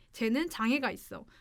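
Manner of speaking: ordinary delivery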